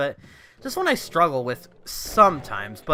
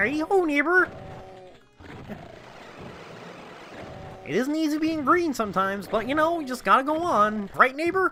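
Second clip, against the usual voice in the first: voice going way up, like a puppet; 11 semitones higher than usual. Talking about a Home Improvement character, the speaker slips into a Kermit the Frog impression. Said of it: "I did a Kermit the Frog impression".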